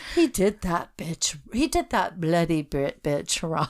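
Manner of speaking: put-on British accent. Put on the spot, trying to do an attempted British accent. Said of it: "Try and do a British accent and say that".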